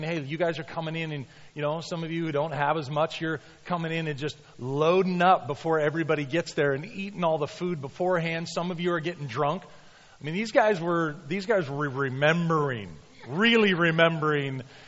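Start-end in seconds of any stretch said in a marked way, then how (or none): none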